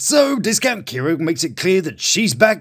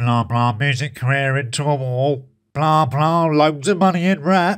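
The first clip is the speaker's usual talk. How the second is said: flat, level, low, droning monotone; 5 semitones lower than usual. Retelling what Millzy says to his worried daughter: Millzy's monotone voice. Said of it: "slips into his monotone thing that he does".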